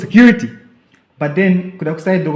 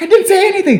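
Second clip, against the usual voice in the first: mock yelling, higher pitch and louder; 4 dB louder than usual. Retelling shouting back at a man from a distance: retelling own scream. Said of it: "I'm screaming back".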